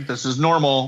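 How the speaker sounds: ordinary delivery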